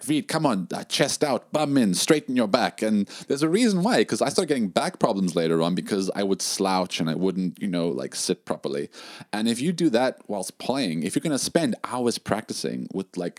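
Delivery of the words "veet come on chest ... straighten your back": mock nagging, high-pitched scolding shout. Retelling how mom would shout about posture: imitating mom shouting. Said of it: "she always, like, shouted at me, like".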